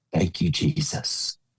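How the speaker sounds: sincere, heartfelt, earnest delivery. Retelling a send-off moment, imitating Bob Tallman's voice. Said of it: "in Bob Tallman's voice".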